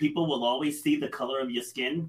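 ordinary delivery

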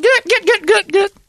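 very high-pitched, loud, squealing voice. Showing how everyone does the impression: Brett impression. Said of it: "There's Brett".

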